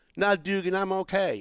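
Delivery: cute, put-on, imitated Southern accent. Quoting a woman's reply after he offered to walk her to her car, cute Southern accent. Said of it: "this really cute Southern accent".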